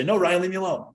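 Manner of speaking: fake angry snapping. Acting out a stressed reply to someone's invitation, retelling snapping angrily. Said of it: "I just bite his head off and say".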